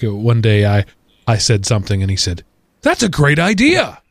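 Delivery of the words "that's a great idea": high, slow, drawn-out surprised tone. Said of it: "You don't have to be so surprised".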